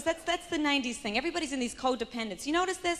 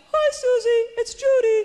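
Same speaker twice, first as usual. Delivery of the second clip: shrill, very high, very loud put-on voice; 10 semitones higher, 11 dB louder than usual. Imitating a woman who always calls you up about seminars, like a cross between Kermit and Julia Child. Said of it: "her voice is like a cross between Kermit and Julia Child".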